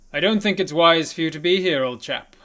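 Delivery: very loud, booming, carrying call. Narrator voices a robed figure stepping out of the tree line, in a loud voice. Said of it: "says out in a loud voice".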